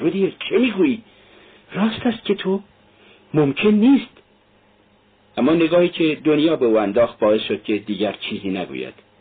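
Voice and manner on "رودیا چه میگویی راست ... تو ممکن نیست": horrified, pitched-up voice. Reading a mother questioning her son about his claim, asking in horror. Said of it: "مادر با وحشت پرسید".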